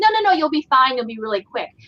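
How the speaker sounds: ordinary talk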